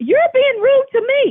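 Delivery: shrill, furious scream, pitched way up. Still upset, arguing with someone who says they are trying to help: screaming. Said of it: "You're screaming and swearing at me".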